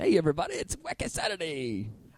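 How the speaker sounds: over-the-top radio DJ voice with swooping pitch. Explaining microphone technique, the speaker demonstrates a show greeting: crazy radio guy voice. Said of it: "Crazy radio guy".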